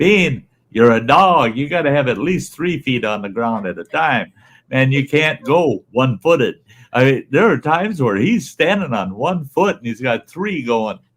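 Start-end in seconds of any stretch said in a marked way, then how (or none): 0.0-6.6 acted, pitched-up, put-on scolding tone. Retelling a moment with a dog in booties: retelling yelling at a dog. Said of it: "I'm yelling at Bean".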